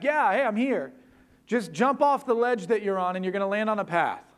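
yelled, hollered from far away. A storyteller voices someone answering from the storm, acting out a yell back. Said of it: "a voice comes yelling back".

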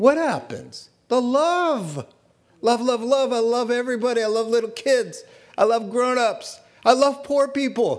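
high, overjoyed, gushing delivery.

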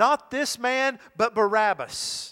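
loud, high, slow, drawn-out crowd-like shout.

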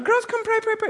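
very high-pitched, beckoning church-lady voice. Retelling how a praying lady called her girls over: imitating a Chilean lady. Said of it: "she's from Chile".

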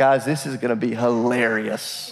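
slow speech through amused laughter. Imagining Jesus answering the disciples about a plan: mock laughing while talking. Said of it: "I just imagine him laughing".

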